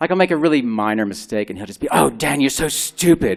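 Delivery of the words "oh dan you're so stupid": slow, put-on British accent. Quoting the inner critic scolding Dan over a minor mistake: put-on British accent. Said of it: "he does it in a British accent".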